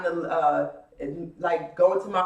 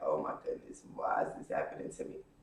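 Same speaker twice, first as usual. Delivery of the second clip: mock hushed, breathy whisper through tears, crying; 12 dB quieter than usual. Retelling running to the bathroom as a child: retelling own crying. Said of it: "running to the bathroom and just crying".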